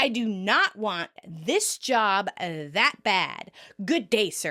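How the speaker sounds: slow, mock sassy dismissive delivery, attitude on every word. Quoting a favorite line of the season, imitating a sassy delivery. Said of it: "You just like giving it that sass".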